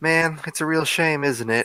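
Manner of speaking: theatrical, flamboyant, fake disappointment. As the character Ras, saying it out loud to the others: flamboyant feigned disappointment. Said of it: "almost like feigning, uh, feigning disappointment".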